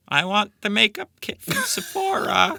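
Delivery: put-on very high cam girl voice. Imitating a cam girl's wish-list thoughts, in a cam girl voice. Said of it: "That's my imitation of a of a thought".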